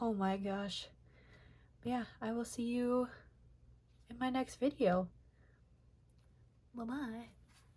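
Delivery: out of breath, breathless, winded speech. Signing off at the end of a sketchbook tour video, out of breath. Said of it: "I am so very out of breath right now".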